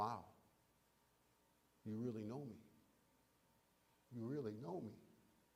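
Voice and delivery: awed, amazed, full of wonder. Discussing how a character could say her line, the speaker tries it: with a sense of wonder. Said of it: "with a sense of wonder".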